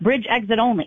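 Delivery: ordinary talk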